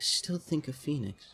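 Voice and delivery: whispering under his breath. Voicing a figure staring at a player: whispering to himself. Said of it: "whispers to himself".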